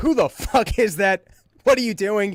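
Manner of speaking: acted startled, confused, alarmed call. Telling how they woke on a host's couch thinking someone broke in; retelling own yell. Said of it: "I start yelling".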